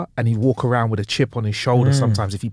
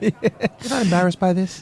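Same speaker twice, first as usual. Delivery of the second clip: put-on indignant comedian voice, pitched higher; 8 semitones higher than usual. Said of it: "I'd love to hear someone like him complaining at customer service".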